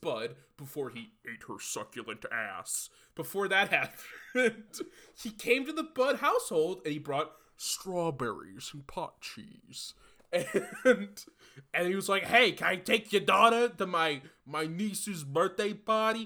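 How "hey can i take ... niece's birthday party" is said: put-on Staten Island accent. Retelling what a visiting man said to a household, in a Staten Island accent. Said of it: "we're on Staten Island, so I talk like this".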